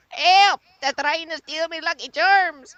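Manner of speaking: put-on very high, wee leprechaun voice with Irish accent. Speaker answers for the wee leprechaun he has right here, in a leprechaun Irish accent. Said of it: "Mister Leprechaun?".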